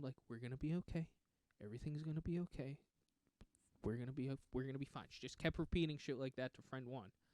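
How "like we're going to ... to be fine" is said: mock steady, calm, soothing tone, not monotone. Retelling how a woman kept reassuring her friend, imitating a calm caregiver tone. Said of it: "not monotone but just calm tone".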